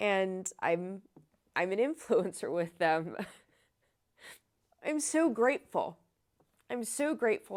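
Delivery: emotional and nervously giggling. Telling how a company invited them to an event: emotional and nervously giggling. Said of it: "that's why I'm emotional and nervously giggling".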